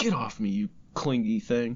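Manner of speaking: plain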